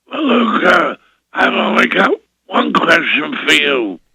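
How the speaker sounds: gruff, somewhat high man's voice. Retelling what Sid said to the speaker's father; Sid's gruff voice. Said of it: "Sid had this gruff voice".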